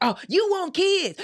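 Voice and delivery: high, loud mocking yell.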